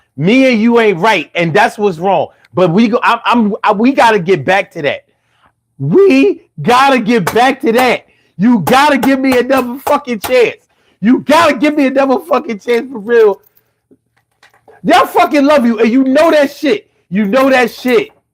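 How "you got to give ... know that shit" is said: mild half-yell, insistent and pressing hard. Speaker begging the listener for another chance, yelling. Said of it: "I know I don't mean to yell. I ain't mean to raise my voice".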